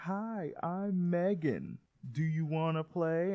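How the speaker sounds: creepy, high-pitched, slow doll voice. Retelling how the doll Megan first greets in the film: creepy Megan voice. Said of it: "you are way too creepy".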